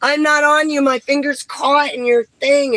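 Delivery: high, loud, protesting yell.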